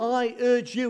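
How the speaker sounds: "I urge you" high and loud, heavy stress on "urge you".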